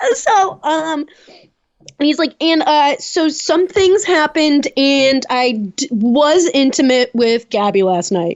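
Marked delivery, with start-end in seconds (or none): none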